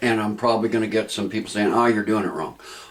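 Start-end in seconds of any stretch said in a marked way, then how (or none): none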